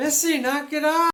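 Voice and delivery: play-acted, loud, high-pitched yelling. Recalling the cat unrolling toilet paper at night, speaker reenacts yelling at her. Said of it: "I'm yelling at her".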